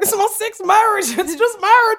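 put-on over-the-top Southern accent, loud and very high. Mocking the loonies who talk about marriage, in a put-on Southern accent. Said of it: "I didn't need to put that accent on it".

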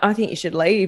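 ordinary talk, nothing marked

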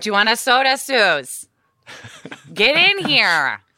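Upper Midwest Minnesota accent. Asked to show their Minnesota accent, the speaker goes into a Minnesotan accent. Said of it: "practice your Minnesotan accent".

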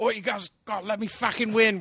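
very high-pitched, loud put-on British accent. Retelling what an opponent in an online game said: imitating a british guy. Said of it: "some British guy".

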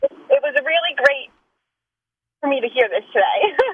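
tearful, on the verge of crying. Speaker thanking the others, starting to cry a little. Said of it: "Are you starting to cry a little bit?".

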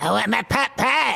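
high, rough, kiddish cartoon kid voice. Speaker does a South Park impersonation mid-conversation: Eric Cartman impression. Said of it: "That was my Eric Cartman South Park impersonation".

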